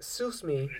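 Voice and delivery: speaking in a put-on Filipino accent. Imagining what a man in the Philippines would say: put-on Filipino accent. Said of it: "He'll have a Filipino accent".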